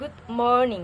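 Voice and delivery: flat good, morning climbs then drops. Intonation lesson example, good morning: level, rise, then fall. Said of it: "the first is horizontal, and then in the second syllable is the rising your tone, and the last is descending your tone".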